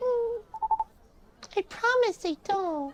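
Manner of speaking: put-on high voice like a small child. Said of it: "I'm sorry I'm reading in this kid voice".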